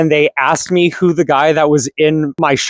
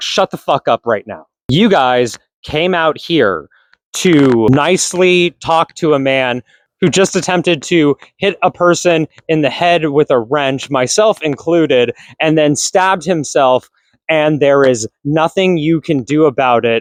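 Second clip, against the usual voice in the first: ordinary talk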